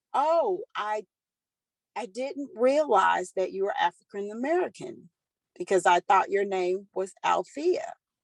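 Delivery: ordinary talk, nothing marked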